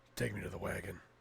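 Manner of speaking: gravelly caped-hero voice with a rough edge. Voicing a shopkeeper who asks to see the wagon: Batman voice. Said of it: "This guy's Batman, apparently".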